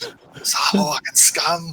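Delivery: growling monster snarl. Game master voicing a creature during the game, in a growling monster voice. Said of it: "accessed my last growling voice".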